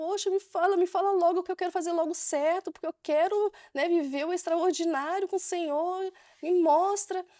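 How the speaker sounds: mock high, tearful, crying, begging plea. Speaker retells crying while praying to the Lord before her birthday, retelling a tearful plea. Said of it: "E eu comecei a chorar e chorando".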